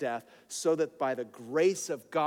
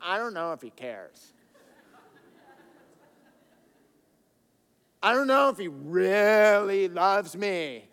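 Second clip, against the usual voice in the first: self-mocking put-on doubt, slow and raised voice; 4 semitones higher, 6 dB louder than usual. Addressing listeners, acting out their doubt while mocking himself. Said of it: "I'm mocking myself".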